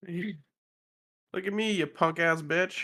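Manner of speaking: shouting in a put-on voice. Taunting the wizard in a tabletop game: yelling at the wizard. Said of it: "I'm gonna yell at the wizard".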